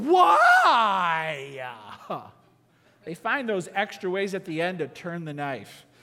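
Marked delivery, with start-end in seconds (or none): 0.0-1.6 put-on sassy teenager voice, swooping and raised. Showing how teenagers ask a question with sass: sassy. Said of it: "When you say it with sass, it sounds like this".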